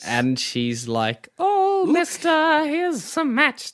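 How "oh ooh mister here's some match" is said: put-on very high-pitched old-woman voice. Retelling the story, the match girl offers matches to a man: Little Match Girl, old-woman voice. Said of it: "she sounds like an old woman".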